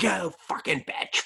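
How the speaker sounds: high doll voice. Quoting a horror movie scene: Chucky voice. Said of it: "And he's like".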